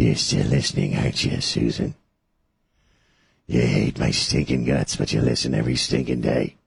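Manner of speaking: unsettling creepy voice. Radio host taunting a listener on air, in his creepy voice. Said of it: "I love you using my creepy voice".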